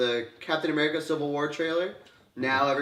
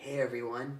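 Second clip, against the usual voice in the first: put-on very young, boyish, kid-like young teen voice; 8 dB quieter than usual. Mocking a trailer actor's voice as sounding too young: imitating Peter Parker's very young voice. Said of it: "His voice sounds really young".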